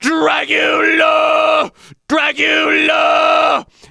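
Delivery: gritty false-chord squeeze. A speaker demonstrating a vocal exercise, gritty false-chord squeeze. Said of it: "false chord squeeze... extra grit".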